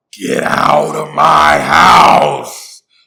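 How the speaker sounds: put-on very loud, very slow, raspy old smoker voice. Retelling a voice in the house ordering them out; imitating Janet's smoker voice. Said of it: "like he been smoking like Newports for like seventy-two years".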